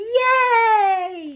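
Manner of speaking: gleeful, very high, drawn-out yay. Retelling a movie ending, quoting Supergirl: imitating happy Supergirl. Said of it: "She was so happy".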